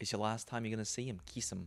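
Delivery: put-on Australian accent. Imitating a movie character urging a kiss, on request: australian accent. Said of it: "do the Australian accent of it".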